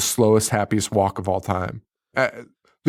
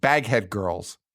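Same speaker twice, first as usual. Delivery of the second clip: usual speaking voice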